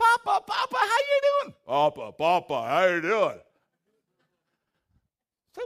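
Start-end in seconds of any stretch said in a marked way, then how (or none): 0.0-3.4 put-on loud, booming, deep teenage voice. Retelling a grandson's greeting after his voice dropped: imitating grandson's dropped voice. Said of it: "his voice dropped".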